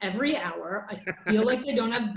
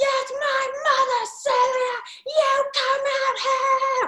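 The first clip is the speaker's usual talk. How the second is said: shrill, very high, screeching scream; 5 dB louder than usual. Retelling the first yelling episode from across the street: imitating someone screaming. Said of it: "the episode one was like".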